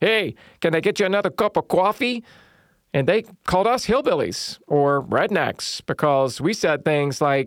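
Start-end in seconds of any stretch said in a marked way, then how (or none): 0.0-2.2 put-on nasal New York accent, higher pitch. Speaker mimicking how Northerners were said to talk, nasal New York accent. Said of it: "talked with this nasal accent".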